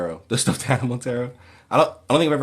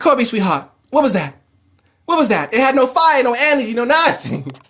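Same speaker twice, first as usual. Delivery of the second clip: higher, louder, put-on flamboyant radio host voice; 12 semitones higher, 6 dB louder than usual. Retelling a movie scene line by line: Chris Tucker impression. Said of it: "And then he's like".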